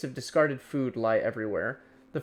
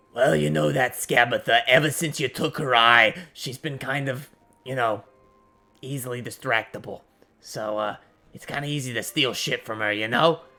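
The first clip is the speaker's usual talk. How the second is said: rasping, scratchy character voice; 4 dB louder than usual. Game master voicing a character overheard through a door, scratchy voice. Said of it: "you hear a scratchy voice".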